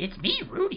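voice squeezed up very high. Showing a running joke about a kids' show character, Rudy impression. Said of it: "I hope that's a pretty good impression".

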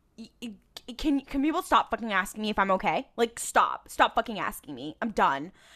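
imitated angry outburst. Retelling a TV scene where Dean turns around pissed: imitating Dean angrily. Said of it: "And Dean is, like, pissed".

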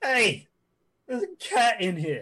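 full-throated, animated, high swooping yell. Voicing a man who finds a cat in the house, yelling. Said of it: "He yells".

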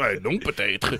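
put-on big, heavy Belgian French accent. Explaining a Belgian phrase and saying it the Belgian way: big Belgian accent. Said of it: "especially with a nice big Belgian accent behind it".

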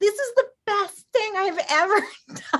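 very high-pitched, thrilled, excited shriek. Recalling being out on a paddleboard for the first time, retelling a scream. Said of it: "I'm like literally screaming".

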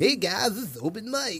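smarmy DJ voice. Trying out a podcast sign-off: sleazy radio host voice. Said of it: "A sleazy radio host".

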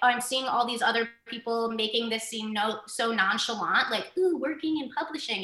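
usual speaking voice

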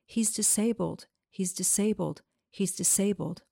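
plain

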